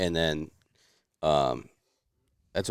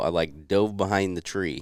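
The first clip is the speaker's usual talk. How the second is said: ordinary delivery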